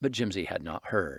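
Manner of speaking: usual speaking voice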